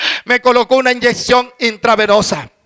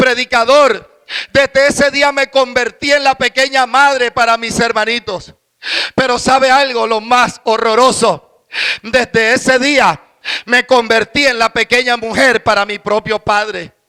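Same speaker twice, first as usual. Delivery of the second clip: normal talking voice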